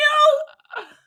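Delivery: put-on very high, drawn-out, furious raging outburst. Imagining a character's reaction to the handshake: imitating a raging character.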